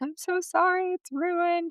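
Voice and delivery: play-acted tearful sobbing voice, pitched way up, slow. Retelling a call from an upset assistant: imitating someone crying. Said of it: "and he's crying".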